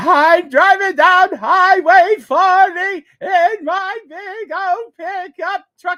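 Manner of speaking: very high, very loud, very slow drawn-out voice. Showing a chat request his Brak voice. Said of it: "It goes a little bit like this".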